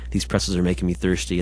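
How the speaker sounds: ordinary delivery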